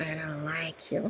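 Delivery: very soft, hushed inner voice. Retelling what a being said telepathically: imitating its voice heard in head. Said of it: "his voice sounds like this in my head".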